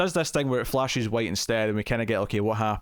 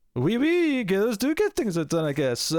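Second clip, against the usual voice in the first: terrible, pitched-up, put-on French accent; 11 semitones higher than usual. Recapping a show episode, quoting Frenchie's line: bad Frenchie French accent. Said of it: "about as good as his French accent, which is to say, equally terrible".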